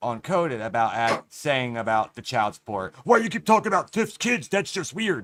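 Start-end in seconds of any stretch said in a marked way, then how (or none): 3.0-5.2 mock freaking out, worked up, pitched up. Retelling how Ryder freaked out about the child support: imitating Ryder freaking out. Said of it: "we all heard fucking Ryder freak out".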